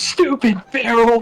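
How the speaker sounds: shouting. Recounting a story, quoting another person yelling at the barrel: retelling a yell. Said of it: "Aurelia just yells".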